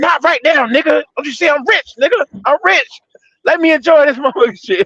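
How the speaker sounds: very high, pitched-way-up comedian voice. Retelling a comedian's put-down in a Dave Chappelle voice. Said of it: "putting on a Dave Chappelle voice".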